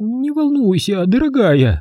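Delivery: quavering, trembling, shaky soothing voice. A woman speaks to a huge doll as three people enter, in a trembling voice. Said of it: "дрожащим голосом обратилась Фабриэла".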